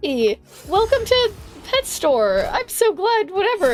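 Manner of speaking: voice pitched way up, slow. Imitating how he greeted pet store customers, voice up three octaves. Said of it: "his voice would go up like three octaves".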